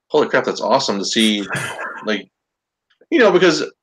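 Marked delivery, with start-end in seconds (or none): none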